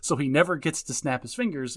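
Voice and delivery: ordinary delivery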